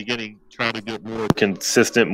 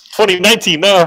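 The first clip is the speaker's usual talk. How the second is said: loud, high-pitched shouting yell; 8 semitones higher, 6 dB louder than usual. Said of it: "why are we yelling?".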